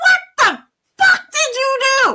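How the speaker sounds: very high-pitched, shrill yelling outburst. Retelling own reaction to a phone call about a death: imitating own past yelling. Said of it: "why are you yelling at my dead dad?".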